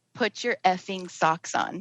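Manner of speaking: mock-muttered under the breath. Retelling what a girl said under her breath, imitating muttering under breath. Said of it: "I hear her mutter under her breath".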